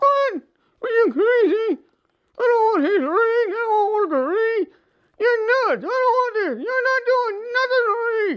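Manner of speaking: mangled, barely intelligible, high, garbled monster voice. In a puppet show, the reanimated creature answers the doctor's brain idea: hard-to-understand creature voice. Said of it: "Um, in the process of reanimating you, when um, we, we, we may have affected your brain just a little bit. / You can't hardly talk. ... Well, you might be a little hard to understand, / Uh, if you thi".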